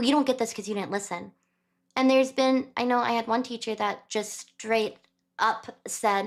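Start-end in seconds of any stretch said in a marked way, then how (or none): 0.0-1.3 put-on frustrated, scolding tone. Retelling how a teacher answered a struggling student: imitating a frustrated teacher. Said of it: "the teacher would just get frustrated".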